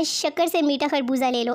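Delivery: plain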